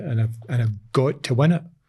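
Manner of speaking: ordinary talk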